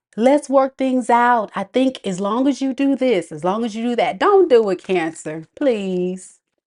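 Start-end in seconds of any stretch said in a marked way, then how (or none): 0.2-4.2 derisive tone. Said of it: "Look at you talking about".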